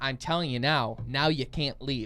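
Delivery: ordinary delivery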